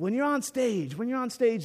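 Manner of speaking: put-on English accent. Retelling a movie scene, quoting Nigel Tufnell's answer about the amps: Nigel Tufnell English accent. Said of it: "there's my English accent".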